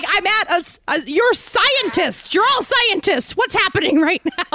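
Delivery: put-on screaming. Retelling reacting to a joke on a bus, retelling a scream. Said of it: "I just was screaming".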